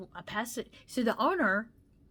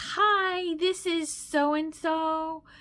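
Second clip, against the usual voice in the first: mock chipper, very slow, sunny, "hi" drawn out and pitched up; 7 semitones higher, 4 dB louder than usual. Retelling a phone call at the florist's, imitating a chipper voice. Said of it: "she had a very chipper voice".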